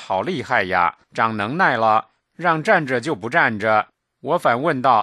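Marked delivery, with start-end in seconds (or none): none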